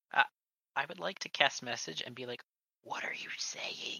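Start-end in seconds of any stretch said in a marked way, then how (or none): 2.8-4.0 whispering. Asking a player through a message spell, whispering. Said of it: "Don't whisper".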